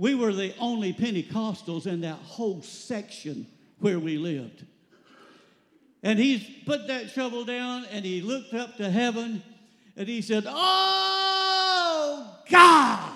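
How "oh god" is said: put-on shouting, higher pitched and louder. Retelling someone's prayer out in the snow, imitating someone yelling a prayer. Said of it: "he just yelled it out".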